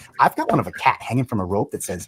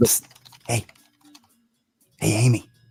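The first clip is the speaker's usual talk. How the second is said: hushed, whispered voice. In a played scene, one character gets another's attention, whispering. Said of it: "Why are you whispering?".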